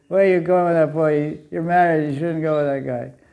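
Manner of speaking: ordinary delivery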